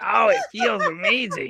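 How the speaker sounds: odd, high, weird little squeaky voice. Retelling a man answering an anonymous question in sex ed class, in a weird squeaky voice. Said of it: "in this weird squeaky voice".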